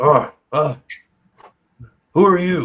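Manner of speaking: put-on loud, grunting orc character voice. Voicing an orc stepping into the light to question a player: put-on orc voice. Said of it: "this tall orc kinda just looking at you".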